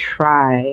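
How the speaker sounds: emphasis on "try to". Talking about taking care of oneself: stress on try to. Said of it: "And I emphasize the word try to".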